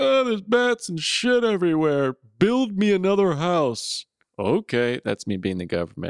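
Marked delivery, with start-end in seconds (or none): 0.0-4.0 very high, sniveling, whiny boo-hooing. Imagining someone boo-hooing to the government for a new house, mock boo-hooing. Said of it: "I can't imagine boo-hooing to the government".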